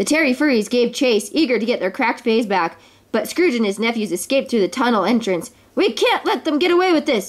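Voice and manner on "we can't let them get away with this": high, shouted cry, yelling. As Scrooge and his nephews escape through the tunnel, the king yells. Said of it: "yelled the king".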